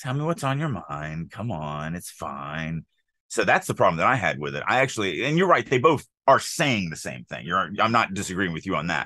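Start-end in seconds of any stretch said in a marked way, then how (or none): 0.0-2.8 gentle, nurturing, mom-like, soothing tone. Reading a story line aloud to show how it sounds: motherly tone. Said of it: "it's this much more motherly".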